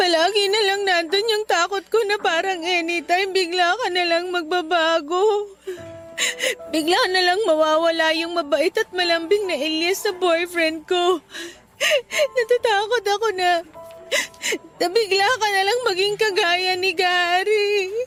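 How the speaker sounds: tearful, crying while talking. Apologizing to a boyfriend named elias who says don't cry: crying while talking. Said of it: "Huwag ka nang umiyak".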